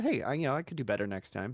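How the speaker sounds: plain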